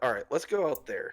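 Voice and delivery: plain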